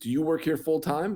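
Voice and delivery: mock hostile, challenging, angry confrontational tone. Retelling how someone slapped your back at the stadium and confronted you, mock-angry. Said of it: "he's angry".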